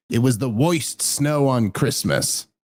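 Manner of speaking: put-on old-fashioned voiceover narration with old-timey narrator accent. Speaker showing a co-host a vanished old accent, in Frosty the Snowman narrator voice. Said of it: "that old accent that's completely gone away? ... the old timey thing".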